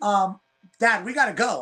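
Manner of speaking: slow, drawn-out delivery. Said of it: "it was the way she said it".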